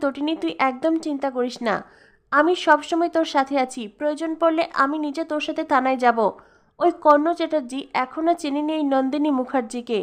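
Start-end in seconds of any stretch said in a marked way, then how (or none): none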